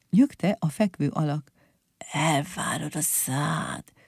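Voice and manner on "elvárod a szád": soft, hushed whisper under the breath. Narrator reads the leaning figure answering the others; whispered. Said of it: "suttogta a könyöklő".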